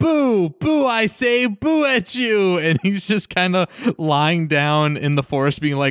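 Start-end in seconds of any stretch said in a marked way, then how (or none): 0.0-2.6 play-acted very slow, high, long-stretched hollering. Retelling a character shouting after someone running out of the house: imitating someone shouting. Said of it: "shouting after him".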